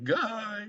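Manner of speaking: very high squeak, sudden voice crack on guy. Analyzing a fighter's chances, the speaker's voice cracks mid-sentence. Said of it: "Fucking voice crack".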